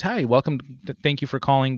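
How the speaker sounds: polite call-center customer-service phone voice. Giving an example of social norms with a greeting, customer-service phone voice. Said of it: "this customer service voice".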